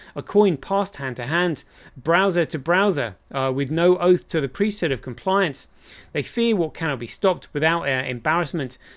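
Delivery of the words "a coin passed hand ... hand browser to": ordinary delivery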